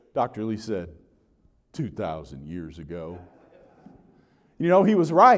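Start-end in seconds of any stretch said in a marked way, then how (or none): 1.8-3.2 bass Southern drawl, very low and hushed. Retelling a tour guide's question and the answer, Dr. Lee's bass Southern drawl. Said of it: "in that classic bass Southern drawl of his".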